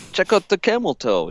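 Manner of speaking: worst possible fake British accent, high-pitched. Joking about what to say to a fake Brit: worst put-on British accent. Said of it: "in my worst accent I can possibly do".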